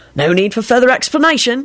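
bright, cheerful voice with pitch rising. Sirius responds to Lupin's one-word reply, cheerful. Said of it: "Sirius said cheerfully".

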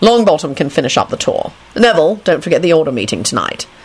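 plain reading voice

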